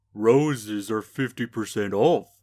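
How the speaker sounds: lowest-register country voice, very slow and deliberate. Voicing a rose-selling gardener after being asked for it: very deep country voice. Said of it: "make it as deep as you can".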